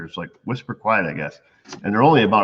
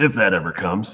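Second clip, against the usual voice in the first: performed sarcastic delivery, mock sarcasm. Reading a listener's letter aloud, performing its marked sarcastic aside with put-on sarcasm. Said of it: "saying sarcastic voice".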